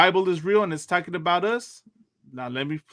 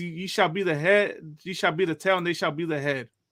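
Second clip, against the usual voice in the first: ordinary talk, nothing marked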